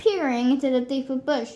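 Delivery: plain reading voice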